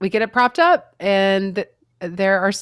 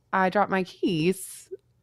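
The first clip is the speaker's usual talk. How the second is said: very quiet, small, understated offhand remark; 6 dB quieter than usual. Retelling losing keys down a storm drain: imitating saying it very quietly. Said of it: "I just said it very quietly".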